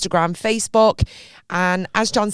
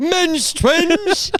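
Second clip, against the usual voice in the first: put-on showy announcer voice, higher pitch; 11 semitones higher than usual. Repeating a funny phrase to the other speaker: voice like the X Factor guy. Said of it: "Why did you sound like the guy from X Factor?".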